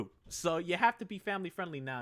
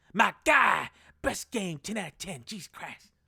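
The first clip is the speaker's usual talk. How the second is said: slow, loud, high, drawn-out exclamation; 5 semitones higher, 5 dB louder than usual. Speaker shows how Video Game Donkey talks, Video Game Donkey voice. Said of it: "that's the way he talks".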